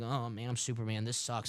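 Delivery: play-acted, gloomy, self-pitying, glum moping voice. Retelling how the last movie's Superman acted: mock depressed Superman voice. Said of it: "he was all, like, depressing".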